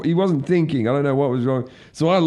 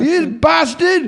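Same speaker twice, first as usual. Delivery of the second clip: mock drunken yelling, much higher and louder; 14 semitones higher, 4 dB louder than usual. Echoing the story of a drunken man in McDonald's, imitate him yelling. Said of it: "And he's yelling and fucking screaming".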